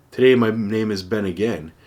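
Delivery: ordinary delivery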